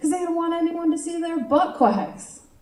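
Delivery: put-on smug, cocky six-year-old voice, pitched high. Retelling a nephew's joke: imitating a child's cocky confidence. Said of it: "he said it with, like, this six-year-old confidence".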